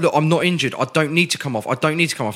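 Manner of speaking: plain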